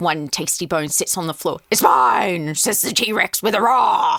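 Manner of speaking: gruff T-Rex dinosaur voice. Showing how she reads a book to her son: gruff T-Rex voice. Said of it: "we're looking at a Tyrannosaurus Rex".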